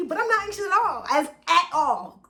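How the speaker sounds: excited, fast, tripping and stumbling over words.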